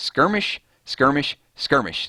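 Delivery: high, froggy cartoon character voice. Trying to say a word three times fast, sounding like Kermit the Frog. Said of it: "I sound like Kermit the Frog".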